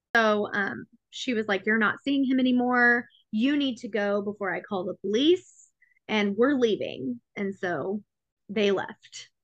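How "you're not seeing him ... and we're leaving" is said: ordinary talk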